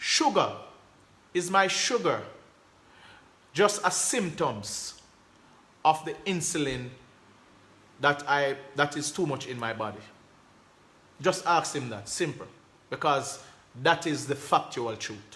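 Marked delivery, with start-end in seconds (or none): none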